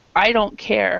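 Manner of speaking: plain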